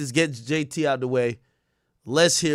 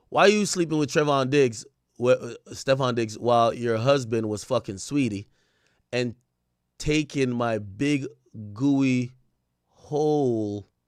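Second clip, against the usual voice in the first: normal talking voice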